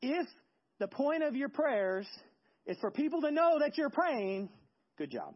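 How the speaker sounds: sing-song sarcastic tone. Retelling what Jesus says to people who pray for show, imitating a sarcastic tone. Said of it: "in sarcasm".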